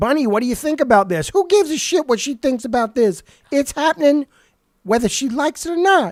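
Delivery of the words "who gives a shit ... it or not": tossed off casually with high-pitched sass. Voicing Miss Sassy brushing off Bunny's opinion: sassy Miss Sassy voice. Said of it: "That was so sassy".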